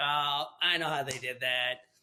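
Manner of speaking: ordinary talk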